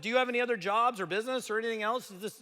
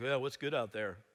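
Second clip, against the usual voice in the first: put-on depressed tone, much lower pitch; 10 semitones lower, 6 dB quieter than usual. Speaker retelling a phone call from a man, imitating a depressed caller. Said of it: "you sound depressed".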